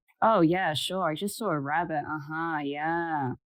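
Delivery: sarcastic, mocking tone. In the woods, answering the idea that it was just a rabbit, sarcastically.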